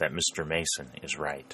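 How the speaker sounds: usual speaking voice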